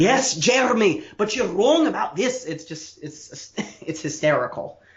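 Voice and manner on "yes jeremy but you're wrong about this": put-on high, lilting North Welsh accent. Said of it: "Owen Smith's, uh, Welsh lilt".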